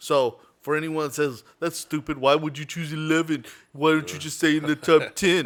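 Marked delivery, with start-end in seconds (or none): 1.6-5.5 put-on stupid-person voice. Imitating people who would question the speaker's list: mock stupid voice. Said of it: "true stupid voice".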